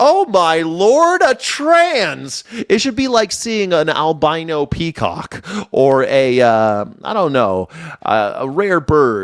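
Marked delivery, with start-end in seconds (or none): 0.0-2.4 put-on wonder, very high, swooping, sing-song amazement. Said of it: "that's how everyone should behave".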